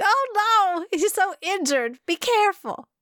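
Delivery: put-on very high-pitched Southern lady voice and accent. Recalling a reaction to seeing Chiyono Kuni injured: Southern lady voice. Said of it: "I like the way you just went like Southern lady there".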